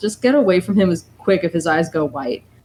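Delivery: plain reading voice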